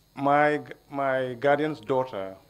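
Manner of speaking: slow, loud, careful enunciation.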